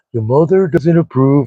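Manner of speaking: small, creepy put-on voice. Recalling a voice from the show Monster: creepy Ed Gein voice. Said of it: "little, you know, creepy voice that Ed Gein does".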